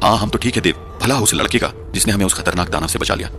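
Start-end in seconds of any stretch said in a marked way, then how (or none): none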